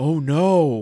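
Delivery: fake audience gasp. Imitating the studio audience's gasp: imitating a shocked audience gasp.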